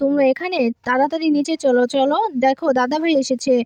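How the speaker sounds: ordinary delivery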